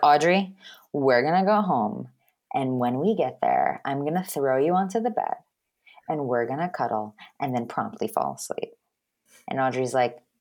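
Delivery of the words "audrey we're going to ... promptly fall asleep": acted low, drowsy, exhausted, worn-out voice. Acting out Pacey telling Audrey they're going home: sleepy Pacey voice. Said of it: "he's so tired. He's like".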